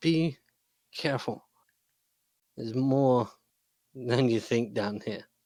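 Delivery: hushed whisper. Voicing a bleeding man who warns you as you get close, whispering. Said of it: "he whispers to you".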